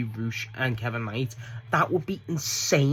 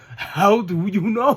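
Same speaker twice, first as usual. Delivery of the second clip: slow, loud, drawn-out mocking taunt. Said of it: "he's just laughing, going".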